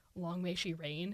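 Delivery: ordinary talk, nothing marked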